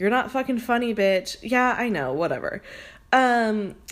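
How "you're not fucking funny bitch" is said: ordinary talk, nothing marked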